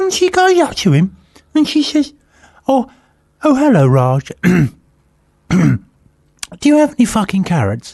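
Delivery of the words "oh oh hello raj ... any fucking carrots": put-on nice, posh middle-class lady voice. Retelling what a lady said to a shopkeeper: imitating a middle-class lady. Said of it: "this perfectly reasonable looking middle class lady".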